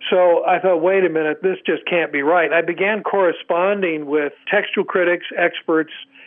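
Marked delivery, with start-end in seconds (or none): none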